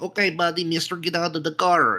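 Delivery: slow, high, odd put-on Eastern European accent. Retelling a robbery, imitating a robber's weird accent. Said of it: "he sounded like Yusuf almost".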